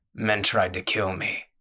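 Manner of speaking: low growl from deep in the throat. A man, asked why he couldn't come back, answers her: low growl. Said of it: "he growled".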